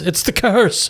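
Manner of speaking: high, tearful weeping through sobs. A character who cannot remember his dream breaks down: weeping and muttering. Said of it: "begins weeping, muttering about the curse".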